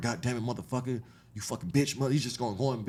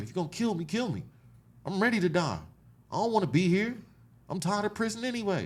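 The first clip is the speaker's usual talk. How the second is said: raw, desperate, high-pitched screaming, acted; 8 semitones higher than usual. Recounting being slammed to the floor in prison, retelling a scream. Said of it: "I'm screaming".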